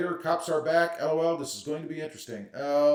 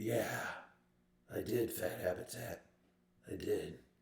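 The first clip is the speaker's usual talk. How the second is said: sinister, breathy, hushed, menacing whisper; 7 semitones lower, 12 dB quieter than usual. Reading out comments, the speaker voices Gear Runner in a mock-menacing tone. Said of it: "That was in Gear's menacing voice".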